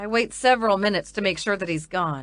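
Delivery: ordinary delivery, nothing marked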